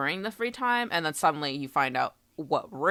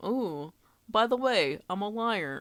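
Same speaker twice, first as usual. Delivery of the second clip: high voice, ooh stretched out and pitched up; 6 semitones higher than usual. Retelling what Kokichi says in every free time event: imitating Kokichi. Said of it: "every single one was like".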